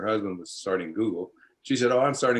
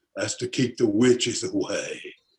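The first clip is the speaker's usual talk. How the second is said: words pulled down into the throat. A storyteller retells Ray's answer in Ray's deep throaty voice. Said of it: "Ray talked in this really deep voice like this".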